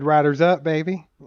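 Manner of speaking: ordinary delivery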